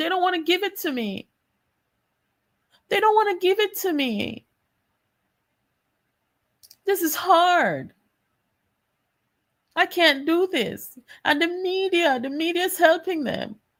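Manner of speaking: high, whining, kicking-and-screaming complaining tone. Mocking how Mark Golding talked to the diaspora: mock whining as Mark Golding. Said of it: "he's whining and complaining".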